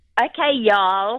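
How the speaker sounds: put-on American accent, best attempt. Told to do her best American for a role, trying an American accent. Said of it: "you're just going to have to do your best American".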